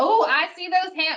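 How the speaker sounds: sudden slip into a country accent. Asking listeners to raise their hands, sudden country accent. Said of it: "Why did I get a country accent".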